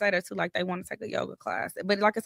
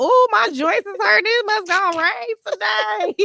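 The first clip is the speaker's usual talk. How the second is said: put-on very high, slow, drawn-out, complaining old granny voice; 12 semitones higher, 6 dB louder than usual. Chatting with a friend about aching joints in bad weather: imitating an old grandma. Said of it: "like an old grandma thing".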